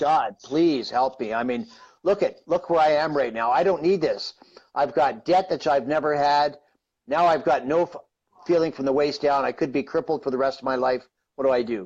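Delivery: normal talking voice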